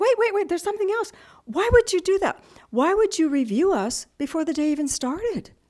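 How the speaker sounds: high, loud, heated delivery.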